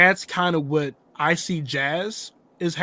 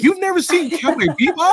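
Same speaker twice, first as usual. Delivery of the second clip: put-on furious yell, higher and louder; 12 semitones higher, 6 dB louder than usual. Retelling an angry message from Ash's wife: imitating Vice yelling furiously. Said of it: "she's furious".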